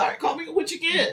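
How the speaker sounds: high, fast, eager shout.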